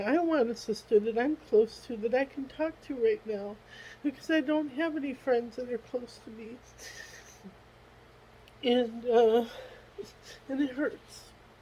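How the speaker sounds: soft, tearful voice, crying through the words. Speaker talking on their own video, crying. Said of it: "I'm crying on my video here".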